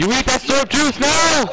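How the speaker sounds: high, loud, excited yelling.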